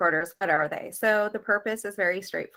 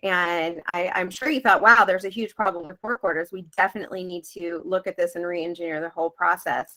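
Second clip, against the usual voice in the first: ordinary delivery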